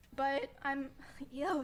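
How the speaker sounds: voice breaking on the words. Talking about a man who won't leave them alone, voice cracking. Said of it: "sorry, voice crack".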